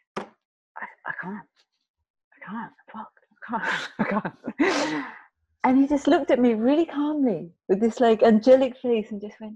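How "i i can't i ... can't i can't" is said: slow, breathy, spent, exhausted whispering. Retelling refusing when told to do one more, imitating exhausted pleading. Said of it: "lying on the floor".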